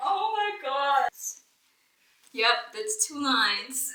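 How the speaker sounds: loud, teary voice, talking through tears. Reacting to seeing two lines, crying while talking. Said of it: "Why are you crying?".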